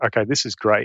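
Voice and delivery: plain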